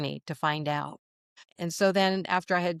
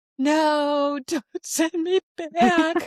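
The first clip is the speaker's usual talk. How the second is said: mock sobbing, very high, slow, drawn-out "no"; 11 semitones higher, 5 dB louder than usual. Retelling pleading in a dream not to be sent back: imitating own past sobbing. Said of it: "now I'm sobbing".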